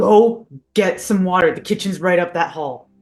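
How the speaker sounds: mild put-on yell, only half-yelled. Yelling at a guard in character, sending him for water: in-character yelling. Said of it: "and I'm yelling at".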